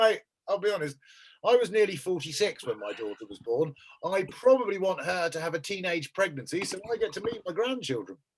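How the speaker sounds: plain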